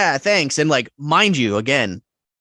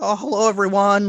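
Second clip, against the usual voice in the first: jittery, anxious, nervous voice, pitched up; 6 semitones higher than usual. Retelling how a nervous guest greeted everyone: imitating someone nervous. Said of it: "He's, like, nervous, like".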